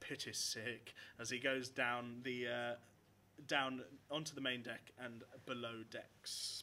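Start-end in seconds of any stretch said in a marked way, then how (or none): 0.0-0.9 muttered under his breath, quieter, lower. The ship's head cleric walks off from the pirates in disgust, muttering under his breath. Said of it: "muttering under his breath".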